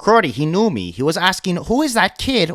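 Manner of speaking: put-on Toronto street accent, best attempt. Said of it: "the best Toronto accent I possibly can".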